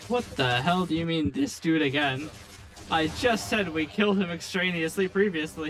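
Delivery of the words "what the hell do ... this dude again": normal talking voice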